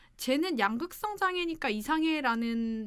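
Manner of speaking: ordinary talk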